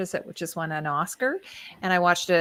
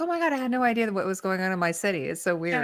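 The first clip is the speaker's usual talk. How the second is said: normal talking voice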